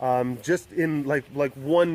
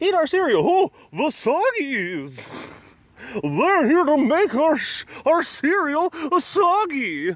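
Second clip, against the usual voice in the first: very high, swooping cartoon commercial voice; 12 semitones higher, 4 dB louder than usual. Recalling old cartoon cereal commercials: imitating a Captain Crunch commercial. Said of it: "the old Captain Crunch commercials".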